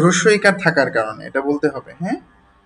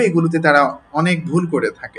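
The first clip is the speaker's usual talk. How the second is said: ordinary talk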